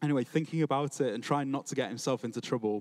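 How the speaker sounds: ordinary delivery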